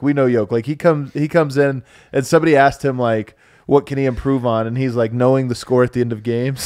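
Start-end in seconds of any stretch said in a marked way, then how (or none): 5.1-6.7 put-on sarcastic tone. Retelling a player's sarcastic answer to a reporter: imitating sarcastic Joker. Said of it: "this is sarcastic Yoke".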